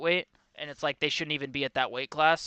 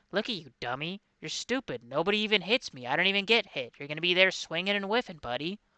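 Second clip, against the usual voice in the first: soft-spoken, calm, even, taunting tone; 4 semitones higher than usual. Act out a man calmly ripping someone to shreds with words, Dominick Cruz impression, calm soft voice. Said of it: "His calm like soft voice".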